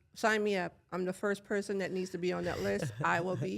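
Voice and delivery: ordinary talk, nothing marked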